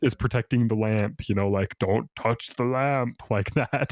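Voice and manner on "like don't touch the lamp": mock angry put-on tiger creature voice. Comparing a voice to the tiger guarding the lamp in a film, mock-angry shadow tiger voice. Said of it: "the angry shadow tiger".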